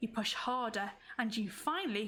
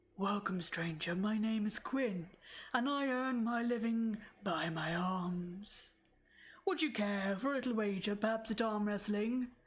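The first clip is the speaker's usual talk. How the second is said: deep voice with the word "arms" drawn out. As you enter the hut, the big man Quinn greets you: deep voice. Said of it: "starts to speak in a deep voice".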